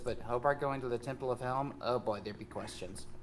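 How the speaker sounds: soft, hushed half-whisper under the breath. In a role-play scene, explaining a trip to a temple: half-whispering. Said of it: "she's whispering this".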